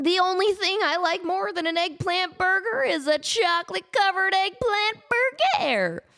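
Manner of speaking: put-on terrible, very high-pitched cartoon stoner voice. Sharing Scooby-Doo trivia, the speaker quotes a line in a terrible Shaggy impression. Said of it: "Terrible Shaggy impression".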